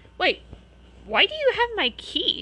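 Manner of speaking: wary, suspicious, very high-pitched and loud. Facing a big, hairy man he never met before, he asks suspiciously. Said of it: "Harry asked suspiciously".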